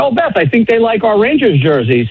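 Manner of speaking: ordinary delivery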